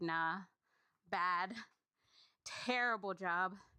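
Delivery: low, slow, dismissive brush-off.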